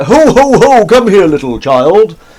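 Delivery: very high, very loud, slow, drawn-out hollering. Joking about a chat comment on playing Santa: Santa voice. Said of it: "Santa's like".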